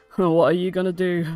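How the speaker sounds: unimpressed character voice. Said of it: "this guy rolls his eyes and he's like".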